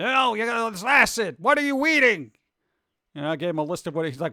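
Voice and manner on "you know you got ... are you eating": over-the-top cartoonish outrage, seventies-comedian style. Retelling what a man told the speaker after getting a list: imitating a cartoonish man. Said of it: "He was like a cartoon character".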